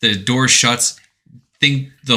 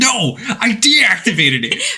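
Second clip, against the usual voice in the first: put-on very high, stretched-out, exasperated voice; 11 semitones higher than usual. Recapping a Metal Gear scene, the speaker quotes the character, mock-frustrated. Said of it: "you can hear the frustration in his voice".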